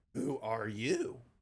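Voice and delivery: low, soft, churning, crackly female voice. A game master voices a female character asking who someone is, low and crackly. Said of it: "low churling voice kind of go in a female, and it's got a crackle to it".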